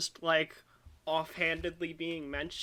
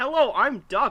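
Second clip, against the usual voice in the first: put-on deadpan character voice, higher and louder; 7 semitones higher, 12 dB louder than usual. Imitating a character appearing and announcing himself: deadpan Duck impression. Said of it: "Duck appears and he's like".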